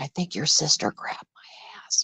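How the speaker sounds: hushed whisper, barely audible. Retelling what he said quietly at a family event: imitating someone whispering. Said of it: "he's whispering to me".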